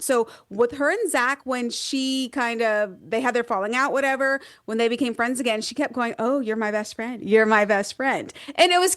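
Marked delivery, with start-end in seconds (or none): 6.2-8.3 put-on dry, sarcastic tone. Retelling what a woman kept telling her friend after a falling out, imitating dry sarcasm. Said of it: "pure sarcasm. It was very dry".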